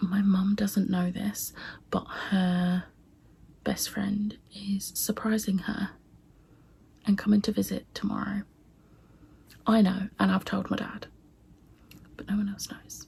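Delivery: in a whisper. Vlogging about a secret, whispering. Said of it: "I'm whispering because".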